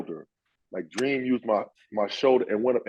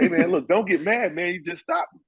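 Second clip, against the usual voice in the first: put-on playful taunting tone, pitched higher; 8 semitones higher than usual. Retelling how a player taunted defenders after scoring: imitating Ricky Pierce trash talking. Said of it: "He'd be like".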